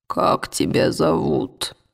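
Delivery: hushed, rough, low rumbling voice like engines. A narrator voices the bear speaking quietly to another character: quiet low rumbling voice. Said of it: "низким голосом, рокочущим, как судовые машины".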